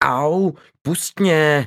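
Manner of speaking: quick, high, sharp pained outcry. Lucie, groped by Petr, cries out at him, screaming. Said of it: "zařvala Lucie".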